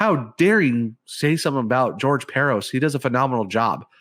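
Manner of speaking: ordinary delivery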